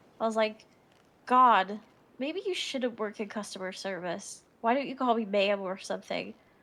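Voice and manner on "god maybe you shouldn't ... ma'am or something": put-on sassy tone. Retelling own words to a rude worker: retelling with sass. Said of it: "I'm being way more sassy right now".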